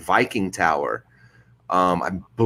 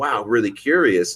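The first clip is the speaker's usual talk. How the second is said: ordinary delivery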